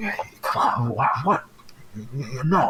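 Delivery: put-on man's hushed, urgent anger, not loud. Describing a man who speaks up as a masked stranger passes, retelling urgent, angry, not loud. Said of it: "not loudly but urgently and like angrily".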